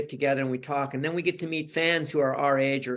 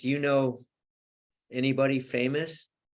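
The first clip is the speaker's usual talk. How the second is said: mock dead-serious, earnest, sincere deadpan tone. Retelling their own line from a movie scene that made him laugh, retelling a sincere deadpan line. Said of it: "I was so sincere and so deadpan".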